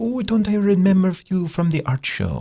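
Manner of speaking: put-on heavy French accent, pitched very high. Retelling a lady who approached during lunch, thick french accent. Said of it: "she really thick French accent".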